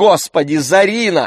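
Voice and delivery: exclaiming aloud, high-pitched. The mother replies to her daughter's question, exclaiming. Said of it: "воскликнула мама".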